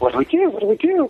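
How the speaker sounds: high, frantic, motherly voice. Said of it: "she's frantic".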